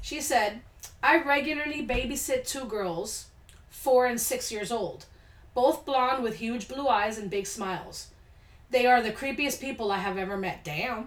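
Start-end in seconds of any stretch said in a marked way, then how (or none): none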